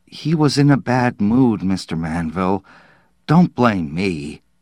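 plain

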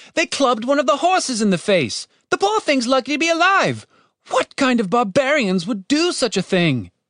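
desperate pleading tone, pitched very high. A third voice appeals to the voice of authority: desperate plea. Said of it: "Called a third voice in a desperate plea".

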